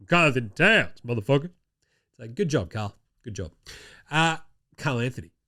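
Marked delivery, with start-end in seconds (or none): 0.1-1.4 put-on man voice. Imitating a basketball player after a big fourth quarter: Karl-Anthony Towns man voice impression. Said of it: "I got my man voice on now".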